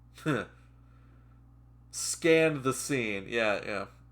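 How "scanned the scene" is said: slow, drawn-out, mocking read. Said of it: "you don't have to write like that".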